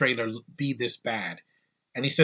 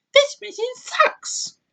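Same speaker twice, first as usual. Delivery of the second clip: very high, loud, squeaky voice; 5 dB louder than usual. Quoting a character's first line in the movie: imitating Penny's voice. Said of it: "this is her voice, literally".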